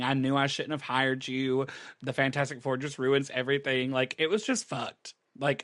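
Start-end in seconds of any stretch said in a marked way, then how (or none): none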